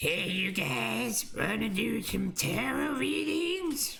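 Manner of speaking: put-on very high, rough, creaky cartoon-kid voice. Before starting a tarot reading, the speaker tries a Cartman impression. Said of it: "That doesn't sound like Cartman".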